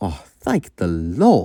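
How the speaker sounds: put-on slow, relieved, sighing old engine voice.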